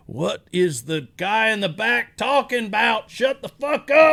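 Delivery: put-on high, slow, drunken, heckling yell. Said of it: "all these guys just yelling at me".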